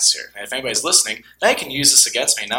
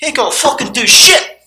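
put-on Irish accent, higher and louder; 11 dB louder than usual. Doing an impression during talk about McGregor and Mayweather: Conor McGregor impression. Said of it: "That's my impression".

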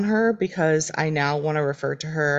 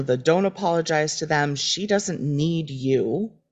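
ordinary talk, nothing marked

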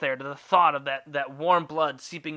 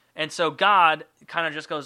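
ordinary talk, nothing marked

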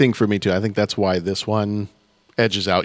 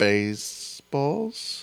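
hesitant, uncertain tone, higher and quieter; 6 semitones higher, 7 dB quieter than usual. Naming a favorite film when pressed to pick one: unsure, questioning tone. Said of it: "You sound so sure of yourself".

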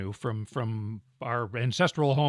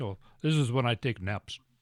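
put-on heavy, thick, laid-on Russian accent; 2 semitones lower, 4 dB quieter than usual. Retelling a cab driver's reply to a compliment, in a thick russian accent. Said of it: "in a thick Russian accent".

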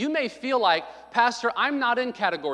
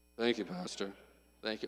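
half-hearted, perfunctory, insincere tone; 13 semitones lower, 12 dB quieter than usual. Acting out a congregant thanking the pastor without meaning it: imitating Brother Jeff's half-hearted thanks. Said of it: "No, you say it like you mean it".

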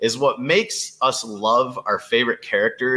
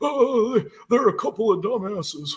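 put-on very high, worn-out, haggard old janitor voice; 10 semitones higher than usual. Recalling a janitor from a series, the speaker does a haggard old janitor voice. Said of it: "the janitor will just be like".

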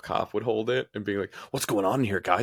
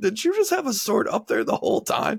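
very high, almost crying with laughter; 13 semitones higher than usual. Retelling a friend's question after a surprise sword attack: imitating someone cry laughing. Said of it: "Nick just starts almost cry laughing".

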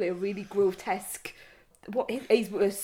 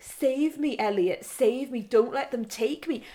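put-on screaming, higher; 4 semitones higher than usual. Retelling a scene where a man in a sack screams for Elliot, retelling a scream. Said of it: "he's screaming".

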